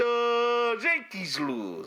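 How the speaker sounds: sing-song, swooping pitch, long drawn-out "the". Telling someone they don't sound enough like him: Big Poppy impression. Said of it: "sounding enough like Big Poppy".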